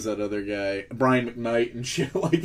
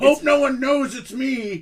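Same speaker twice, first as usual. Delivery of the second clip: mock villain shouting, higher pitch; 14 semitones higher, 3 dB louder than usual. Imitating a movie villain announcing plans: imitating a villain yelling plans. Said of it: "villains are just like yelling their plans out".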